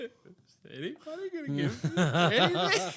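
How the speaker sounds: forlorn, sad, small voice, high and swooping. Retelling sitting in the corner as a child with no gift: imitating own sad past self.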